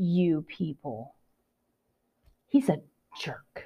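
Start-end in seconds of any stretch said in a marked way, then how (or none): 0.0-1.1 dripping with disgust, dismissive voice. Mocking a commentator's tone from a played clip: imitating Chuck's disgusted voice. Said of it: "And then he has his disgusted voice".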